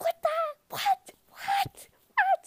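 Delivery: mock stunned, very high, very slow drawn-out "what". Speaker recalls learning that two people kissed, acting out remembered shock. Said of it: "I remember being like".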